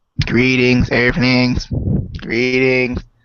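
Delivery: put-on otherworldly visitor voice. Opening a video, the speaker tries out an alien voice. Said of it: "Does that sound like an alien?".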